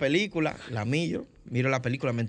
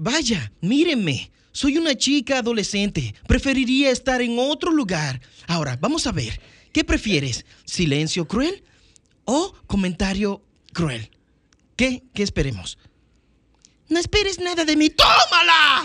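put-on wisecracking antihero voice, higher and louder; 9 semitones higher, 7 dB louder than usual. Showing how the dubbed Deadpool's tone of voice sounds: Deadpool Latin Spanish dub voice. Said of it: "Deadpool, el tono de voz es".

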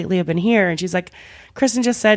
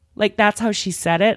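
ordinary talk

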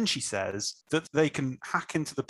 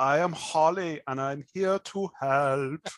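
really stilted, stiff, unnatural delivery. Quoting a character's introduction, in a really stilted way. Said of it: "she says it in a really stilted way".

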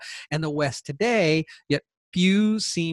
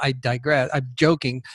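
ordinary talk, nothing marked

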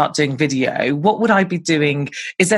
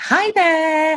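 very high put-on American accent; 13 semitones higher than usual. Retelling how she opens her YouTube videos, in a put-on American accent. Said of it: "she puts this like American accent on".

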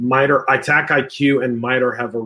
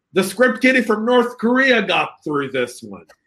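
put-on British voice, higher; 9 semitones higher than usual. Imagining Gordon Ramsay walking in on a review: Gordon Ramsay impression. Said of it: "Imagine Gordon Ramsay walking in".

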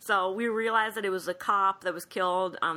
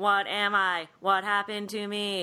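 ordinary talk, nothing marked

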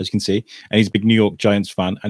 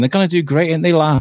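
put-on Wrexham locals' accent; 5 semitones higher than usual. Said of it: "you hear people talking".

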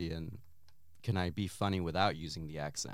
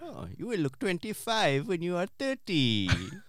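put-on Indian accent, higher pitch; 12 semitones higher, 5 dB louder than usual. Asked by the other speaker to do the accent, Indian accent. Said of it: "With the Indian accent".

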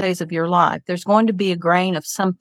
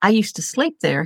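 put-on heavy Spanish accent, laid on; 2 semitones higher than usual.

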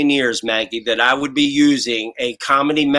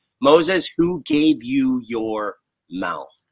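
mock dry sarcasm, slow and swooping. Retelling what God asked Moses: imitating a sarcastic remark. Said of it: "the most sarcastic remark".

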